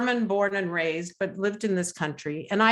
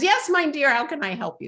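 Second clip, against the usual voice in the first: put-on very high-pitched voice with Polish accent; 7 semitones higher than usual. Recounting a phone call with a panelist: Dr. Solamea Cape's high Polish accent. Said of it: "her very high-pitched Julia Child-like voice with a Polish accent".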